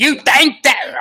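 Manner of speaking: very high, loud, shrill voice. Showing how sounding upset used to come out: Gilbert Gottfried impression. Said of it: "I used to be able to do it, like, spot on".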